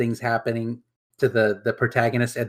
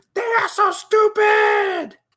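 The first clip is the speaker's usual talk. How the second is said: high, slow shouted yell. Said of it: "and then yell".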